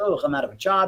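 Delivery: put-on bummed-out, glum, dejected self-pity. Retelling own words after a show closed: imitating own glum self. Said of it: "down about it".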